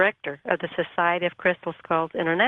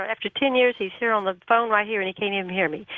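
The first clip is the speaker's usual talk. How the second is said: usual speaking voice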